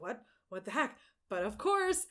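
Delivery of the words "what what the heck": plain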